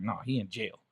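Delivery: play-acted angry, eager, mad retort. Retelling the mother's answer that dad is in jail: imitating an angry retort. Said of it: "I can hear it right now".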